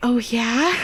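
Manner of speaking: taunting whisper, in character. Playing a character who whispers in an enemy's ear: whispering in character. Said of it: "whisper in his ear".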